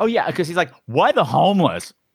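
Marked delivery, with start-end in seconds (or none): 0.8-1.9 mock disgust, dripping with ew, grossed-out. Retelling what the manager asks the star: imitating a disgusted tone. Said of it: "with that tone of, "Ew."".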